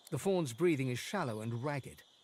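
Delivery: ordinary delivery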